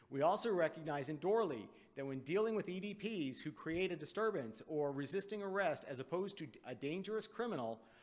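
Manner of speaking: ordinary talk, nothing marked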